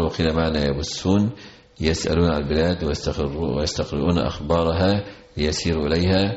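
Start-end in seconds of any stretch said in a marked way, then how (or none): none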